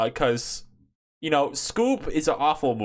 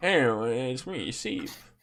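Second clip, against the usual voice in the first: put-on drunk-or-tired YouTuber voice, quieter; 4 dB quieter than usual. Teasing the other speaker by mimicking him: mock drunk-or-tired YouTuber voice. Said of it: "I just sound like drunk or tired".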